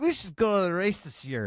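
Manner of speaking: put-on high, tipsy drunk-guy voice, a few drinks in. Retelling a suggestion made after drinks at a gathering: imitating a drunk guy. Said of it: "it's my drunk guy impression".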